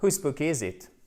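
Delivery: falling pitch, tune dropping on final it. Teaching English intonation of a wh-question: falling on final it. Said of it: "Intonation qui descend".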